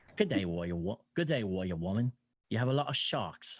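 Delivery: put-on failed Australian accent slipping into a Cockney accent. Trying again to talk like an Aussie: bad Australian accent turning Cockney. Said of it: "that turned into Cockney".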